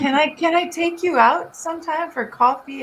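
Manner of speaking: put-on British accent. Retelling a man asking her out for coffee: imitating a British accent. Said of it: "And he had a British accent".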